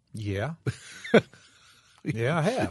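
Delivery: unhurried, deliberate, slow, drawn-out yes. Answering the other speaker's question on the show, said kind of slowly. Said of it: "You say that kind of slowly".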